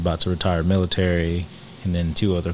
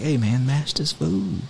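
put-on whisper, higher; 9 semitones higher than usual. Retelling urging a friend at a meal: retelling a whisper. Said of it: "I had to whisper to him".

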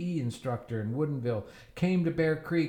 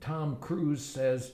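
usual speaking voice

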